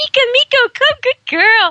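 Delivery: put-on really high-pitched, happy baby talk. Showing a macho guy how he talks to a dog on air, imitating really high-pitched baby talk. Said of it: "you raise your voice really, really high".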